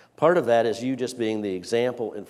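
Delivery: plain reading voice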